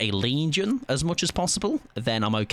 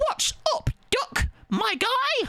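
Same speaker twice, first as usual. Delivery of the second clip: cartoon rabbit voice, pitched very high. Chatting with Amy, the speaker breaks into a Bugs Bunny voice. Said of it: "Bugs Bunny".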